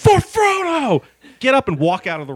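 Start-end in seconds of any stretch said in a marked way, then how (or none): 0.0-1.0 shrill, very high, loud triumphant yell. Retelling finally winning a game: retelling a yell.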